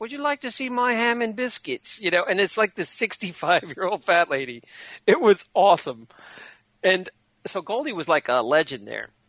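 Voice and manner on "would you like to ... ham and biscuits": put-on female British accent, much higher pitch. Retelling the line Goldie would say while doing her tricks, in Goldie's British accent. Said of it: "she kind of had a British accent".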